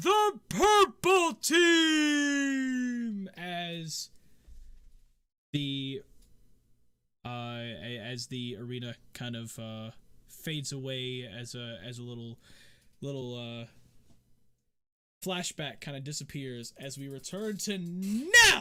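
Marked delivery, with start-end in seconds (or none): 0.0-3.3 high, drawn-out, loud announcer call. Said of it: "the announcer goes".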